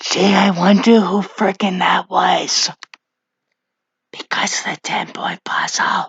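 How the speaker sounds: speaking in a whisper. Reading out episode poll results to the webcam: whispering. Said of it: "I'm also just whispering to my webcam".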